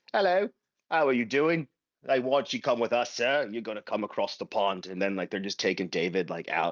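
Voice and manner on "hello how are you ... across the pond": fake, mock English accent. Imagining strangers knocking on someone's door to take him away, mock English accent. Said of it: "Why are they English?".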